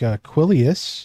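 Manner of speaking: plain reading voice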